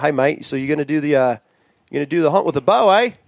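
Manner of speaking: put-on New Zealand accent. Retelling what the guides said on arrival, imitating the guides' accent. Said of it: "I'll do their thing".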